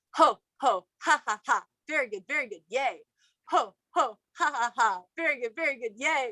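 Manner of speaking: playful laughing-yoga exercise laughter. Showing how a laughing yoga exercise goes: laughing yoga exercise. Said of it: "And in laughing yoga, you go".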